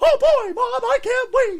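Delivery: high, slow, squeaky voice. Retelling how she answered her mom as a kid, Mickey Mouse voice. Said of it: "I sound like Mickey Mouse when I was a kid".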